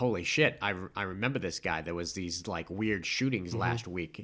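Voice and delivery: ordinary talk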